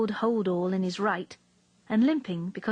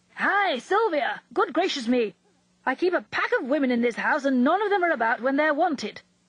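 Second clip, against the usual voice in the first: high, rather angry, cross calling-out voice; 5 semitones higher, 4 dB louder than usual. He can't find anyone and calls through the house for sylvia, calling rather angrily. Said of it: "he called rather angrily for Sylvia".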